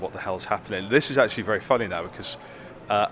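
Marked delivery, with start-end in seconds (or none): none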